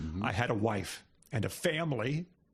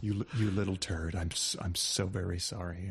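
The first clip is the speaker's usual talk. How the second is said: low, solemn, grave delivery; 5 semitones lower than usual. Redoing the line as bad news from a doctor at a bedside: grave, like bad news from a doctor. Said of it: "It's gotta be grave".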